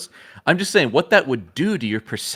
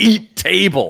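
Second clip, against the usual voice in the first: put-on angry heroic voice, higher pitch; 4 semitones higher, 4 dB louder than usual. Retelling a comic scene where the hero throws a table: rage-filled Luke Skywalker voice. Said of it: "rage-filled comic book Luke".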